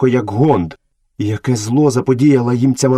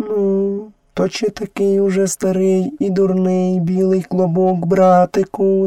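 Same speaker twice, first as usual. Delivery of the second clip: kindly, tender, gentle, pitched-up voice; 7 semitones higher than usual. Reading the story aloud, the panther asks the boy a question, gently. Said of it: "запитала лагідно Багіра".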